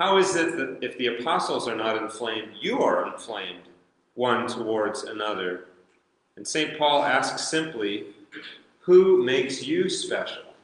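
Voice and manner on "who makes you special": mock faint sarcastic edge, rising pitch. Explaining a passage, the speaker quotes the apostle's question with a little sarcasm. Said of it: "There's a little tone of sarcasm there".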